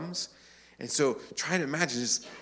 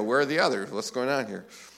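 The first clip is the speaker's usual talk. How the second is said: mock snarky, thin-skinned tone. Imagining how Jesus might react when nine did not return: mock snarky, thin-skinned tone. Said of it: "kind of thin-skinned and maybe a bit snarky".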